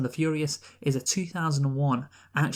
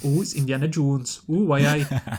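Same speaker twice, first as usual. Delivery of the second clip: mock Newcastle Geordie accent, louder; 6 dB louder than usual. Imitating locals who follow an actor around Newcastle: imitating Geordie fans. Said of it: "Indiana Jones in a Newcastle accent".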